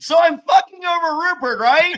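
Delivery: very high-pitched, loud yell. Mocking how a man talked in his confessional near camp, imitating someone yelling. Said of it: "I feel like he's yelling".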